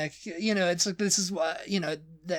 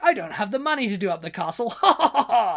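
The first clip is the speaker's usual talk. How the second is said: put-on eccentric ha-ha-ha laugh, higher, louder; 4 semitones higher, 7 dB louder than usual. Describing eccentrics, the speaker mimics one, ending a sentence with a mock ha ha ha. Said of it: "they do ha ha ha at the end of every sentence".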